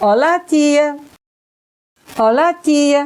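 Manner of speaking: put-on slow, boyish, juvenile young boy's voice. Showing a listener a remembered voice saying a greeting, in a young boy's voice. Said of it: "like a juvenile, boyish of a boy".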